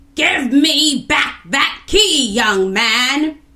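very loud, high, furious yell from afar. Reading a story aloud, a voice shouts at Kofi and the others: angry shout. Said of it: "they heard an angry voice shout at them".

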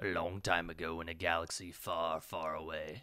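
very quiet, low, hushed villainous voice. Starting chapter 2 of a zombie game, the player reads the opening: evil voice. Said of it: "I did a more evil voice".

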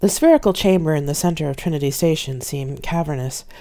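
ordinary delivery

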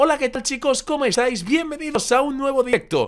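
very high-pitched voice. Trying out different voices, the speaker greets the audience in a somewhat high-pitched voice. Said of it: "Voy a ponerle aguda".

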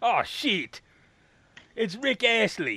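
rough, high put-on New Zealand accent. Acting out someone getting Rick-rolled via vinyl, in an attempted New Zealand accent. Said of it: "What accent were you doing?".

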